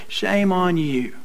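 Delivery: soft, corny, gentle, cheesy TV preacher voice. Speaker shows how a soft tv preacher would call someone out; cheesy soft tv preacher voice. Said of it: "in some cheesy voice".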